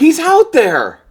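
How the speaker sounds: full-volume, very loud, high-pitched shrieking yell. Arguing with Helen over someone missing, yelling. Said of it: "I'm sorry for yelling".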